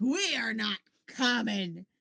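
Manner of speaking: slow, indignant, offended, affronted tone. Retelling a character who takes offense at being called common: imitating an offended character. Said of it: "dude takes so much offense to this".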